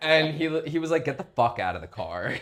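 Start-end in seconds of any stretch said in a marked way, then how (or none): 1.1-2.3 put-on fed-up tone, lower. Retelling a police officer's order to get out of the car: imitating an officer who's not having it. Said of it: "He was just, like, not having it".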